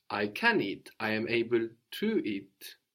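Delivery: ordinary talk, nothing marked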